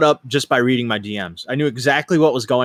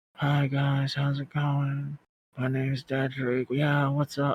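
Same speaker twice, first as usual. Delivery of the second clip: very hushed, soft, light voice; 2 semitones higher, 10 dB quieter than usual. Show how a gamer with a bad headset mic talks, in Dedrick's very light, soft voice. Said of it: "So he talks like this".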